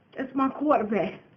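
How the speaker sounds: tearful, crying, emotional delivery. Retelling what fans are saying about their quarterback, in a T.O. voice. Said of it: "in my T O voice".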